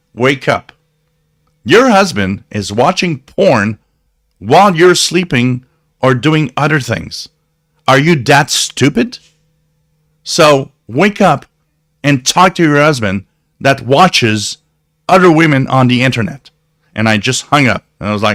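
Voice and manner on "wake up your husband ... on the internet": nasty, cutting, harsh and mean scolding tone. Retelling telling off a customer on the phone before hanging up, retelling being very mean. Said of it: "I was very, very mean".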